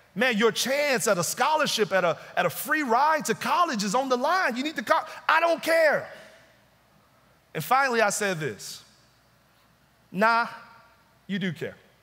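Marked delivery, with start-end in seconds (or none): 5.3-6.1 put-on loud, angry, defiant yell, pitched up. Retelling how a teammate kept yelling back when told to calm down, mock-angry. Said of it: "he's yelling louder about how he doesn't care".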